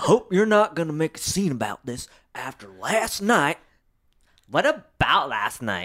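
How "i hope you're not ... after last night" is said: put-on hillbilly accent character voice. Reading a novel aloud, voicing a man cutting in on a woman, in a hillbilly voice. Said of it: "That was more hillbilly than cowboy. / he told her. / That was more hillbilly than cowboy".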